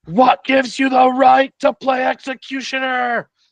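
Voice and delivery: very high, loud scream. Playing a character who draws her bow at an enemy: screaming. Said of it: "just screams".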